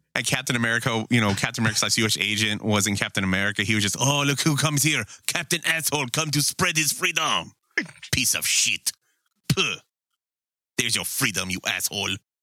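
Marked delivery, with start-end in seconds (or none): 4.3-12.1 terrible, put-on French accent. Quoting a character taunting Captain America, in a terrible French accent. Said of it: "Greg do a terrible French accent".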